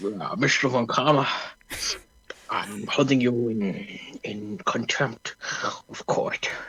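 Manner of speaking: soft, breathy judge voice. Role-playing the judge in a courtroom scene, in a Sean Connery-style judge voice. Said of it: "I've I've got a judge voice".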